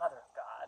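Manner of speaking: imitated under-breath mutter. Retelling a show character's one-liners: imitating someone muttering under breath. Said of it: "under his breath, he'd be like".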